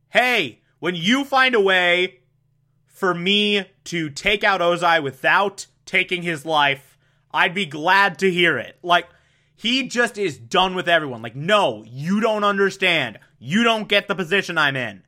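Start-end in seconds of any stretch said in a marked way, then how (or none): none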